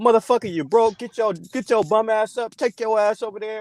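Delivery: put-on macho tough talk. Acting out how a caller should talk to him: imitating aggressive masculine talk. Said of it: "on some aggressive masculine shit".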